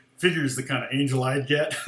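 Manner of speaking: ordinary talk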